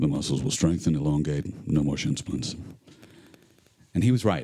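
very deep voice. Telling how a problem was overcome, on request: lowest voice. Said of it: "then in your lowest voice".

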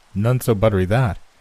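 ordinary delivery, nothing marked

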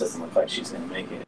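low, hushed, half-whispered aside. Speaking to Steve and Jerry so another player supposedly can't hear, half-whispering. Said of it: "I whisper to Steve and Jerry".

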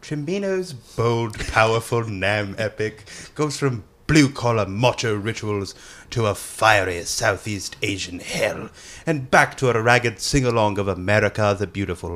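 put-on British man's accent. Reading a magazine's movie description after being asked: put-on British guy voice. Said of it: "hit us with that British guy voice".

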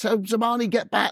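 high-pitched mock scream, shrieking.

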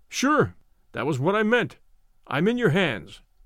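plain

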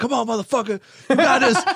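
acted yelling. Retelling how they coached themselves through a tough moment: retelling screaming at oneself. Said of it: "I started screaming at myself".

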